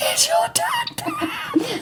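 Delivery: scary, eerie, very high-pitched voice. Retelling phone calls from a boss after throat cancer: imitating Will's scary voice. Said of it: "You sound fucking scary".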